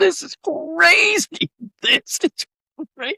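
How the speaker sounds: put-on very high, drawn-out words laughed through. Retelling watching a film with a daughter: retelling laughing while talking. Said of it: "we're just laughing our heads off".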